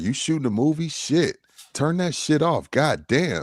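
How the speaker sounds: dead-serious, no-joke, straight delivery. Retelling what Kawhi Leonard said post game: imitating Kawhi Leonard, serious. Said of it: "And he was, like, serious".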